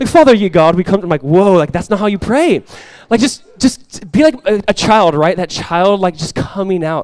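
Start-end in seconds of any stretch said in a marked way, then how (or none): 0.1-1.0 put-on spoken in a British accent. Mocking how some people pray, speaker imitates a King James British-accent prayer. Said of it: "old King James and had a British accent".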